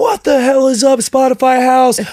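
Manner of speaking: mock bursting with energy, very high, hyped. Retelling the hype man jumping on the table: imitating Brown Bear's burst of energy. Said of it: "I've never seen a burst of energy".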